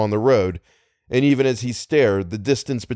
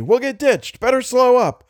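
call pitched very high; 13 semitones higher than usual. Algernon warns Little as the car careens along a narrowing road; calling out warningly. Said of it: "Algernon called out warningly".

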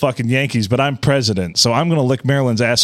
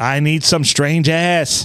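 put-on Massachusetts accent, higher pitch; 3 semitones higher than usual. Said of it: "I'm trying to think of a J F K accent".

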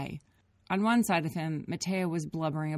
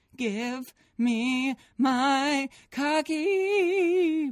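very slow, loud, drawn-out screaming; 10 semitones higher, 6 dB louder than usual. In a car full of arguing people: screaming. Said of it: "Matea screamed".

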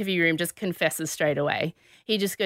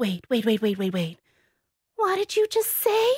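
mocking, badly acted, overacted surprise, higher; 5 semitones higher than usual. Retelling a suspect's badly faked reaction to news of a death: imitating badly acted shock. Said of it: "she's such a bad actress".

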